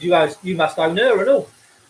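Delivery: normal talking voice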